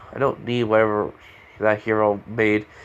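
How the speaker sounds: normal talking voice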